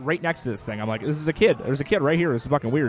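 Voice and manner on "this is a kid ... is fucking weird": usual speaking voice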